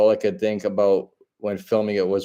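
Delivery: ordinary talk, nothing marked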